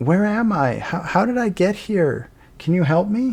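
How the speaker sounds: put-on small child voice, pitched high. Narrating a scene, a voice speaks to Yaza: small child voice. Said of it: "you hear a voice of a small child say to you".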